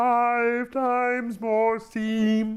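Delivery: very high, loud alien voice, "five" stretched out. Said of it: "There's an alien who talks like that".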